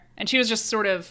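usual speaking voice

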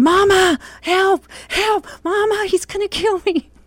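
mock, very high, drawn-out wailing cry. Retelling a childhood chase by an angry brother: retelling a scream for help. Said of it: "I start screaming".

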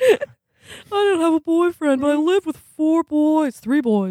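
put-on very high, bubbly, quirky young woman's chatter. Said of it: "I'm doing the baseball card again".

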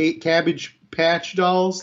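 thick put-on Midwest accent. Retelling how an interviewed woman said the toy name: imitating thick Midwest accent. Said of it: "thick Midwest accent".

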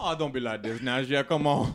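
put-on Louisiana Cajun accent. Redoing the line after the group is told to use cajun accents, cajun accent. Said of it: "now do it all in Cajun accents".

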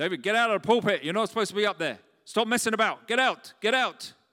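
very loud, booming, high-pitched yell. A pastor recalls his father ordering him out of the pulpit, imitating his father's booming voice. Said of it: "the booming voice of my father".

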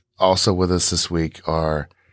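ordinary delivery

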